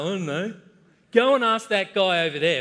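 put-on loud Australian bloke voice with Aussie accent. Retelling a lifeguard's answer about god: imitating a typical aussie male. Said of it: "typical sort of Aussie male".

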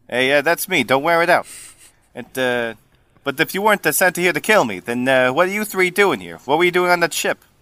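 put-on New Jersey Italian accent. A character introduces himself and questions three strangers, Giuseppe's New Jersey Italian accent. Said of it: "Italian is gonna sound New Jersey".

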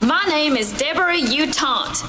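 bad put-on Southern drawl, high and slow.

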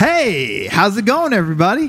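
forced, high, swooping fake enthusiasm. A sports show co-host greets everybody after his intro, with fake enthusiasm. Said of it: "your fake enthusiasm".

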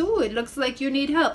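put-on faint, slight touch of French accent. Retelling what a stranger offering help with a suitcase said, little French accent. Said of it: "He has a little French accent".

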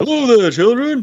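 very high-pitched, deliberately bad cartoon voice. A speaker shows their really bad attempt at a voice, bad Chef impression. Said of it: "our really bad attempt at doing Chef's voice".

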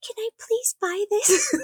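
timid, shy, very high-pitched little voice. Recalling buying something at a gas station, imitating own past shy voice. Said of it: "my voice got so high".

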